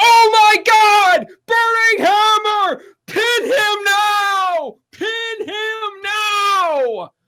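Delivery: put-on very high, very slow, loud, excited commentator call. Retelling a commentator's call of a wrestling move: imitating Daniel Bryan's energetic excited call. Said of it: "And then he hits the Burning Hammer and is like".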